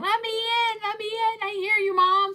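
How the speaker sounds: very high, loud, yowling cat voice. Voicing the cats outside the door: imitating cats yelling. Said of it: "the cats yelling at me, going".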